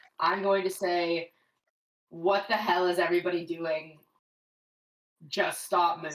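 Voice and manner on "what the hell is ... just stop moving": steady, firm, unraised, normal volume. A player speaks in character to the group, firm but at normal volume. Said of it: "I would say um um firmly".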